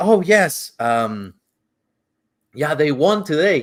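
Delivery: proud voice, full of pride. Retelling what the guy answered during the ride: imitating a proud reply. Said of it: "he said it, like, proudly".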